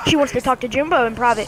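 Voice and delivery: ordinary talk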